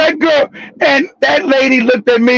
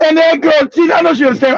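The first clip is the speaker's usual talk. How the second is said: ordinary talk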